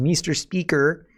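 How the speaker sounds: mock condescending tone. Show how she sniffs in and addresses the Speaker, imitating a condescending mom tone. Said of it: "The condescending mom tone. ... It's like when she sniffs in and says".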